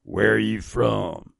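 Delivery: put-on old, grizzled Mississippi accent. Retelling a phone call, quoting a Mississippi pastor's question in a deep grizzled Mississippi accent. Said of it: "in his very deep Mississippi grizzled accent".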